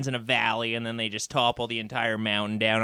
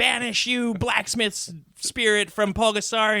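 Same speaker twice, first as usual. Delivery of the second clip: mock, very high, shrill ringing yell; 11 semitones higher, 4 dB louder than usual. Retelling what the exorcist yells at the monster: imitating someone yelling. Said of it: "she's yelling, like".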